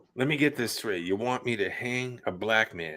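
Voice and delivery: put-on speaking with a Boston accent. Retelling a story, quoting Kevin Sullivan in his Boston accent. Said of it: "can hear him with his Boston accent".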